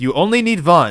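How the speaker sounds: put-on very loud delivery with German accent. Retelling how he answered the editor: German accent. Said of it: "just in his German accent he fired back".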